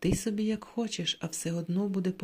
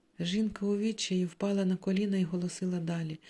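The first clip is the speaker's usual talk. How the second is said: plain reading voice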